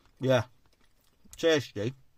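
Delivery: speaking with food in mouth. Tasting a meat and potato pie on camera, the speaker talks with mouth full. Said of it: "I'm talking again, aren't we, with my mouth full".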